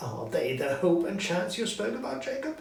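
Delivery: scared, quavering, trembling voice with rising pitch. Narrator reading the story voices Scrooge questioning the ghost: frightened Scrooge, trembling in terror. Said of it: "Again [name] trembled in terror. / Again [name] trembled in terror. / [name] said. / Again [name] trembled in terror".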